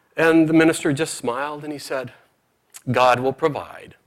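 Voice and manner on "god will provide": very smug, self-satisfied, all-knowing tone. Telling a joke, quoting the minister's reply: imitating a smug reply. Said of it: "Very smugly".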